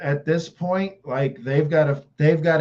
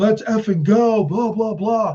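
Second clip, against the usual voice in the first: fired-up, drawn-out hype yell, pitched up; 6 semitones higher than usual. Retelling what Pacheco yells when the camera pans to him: imitating Pacheco yelling. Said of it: "he's yelling".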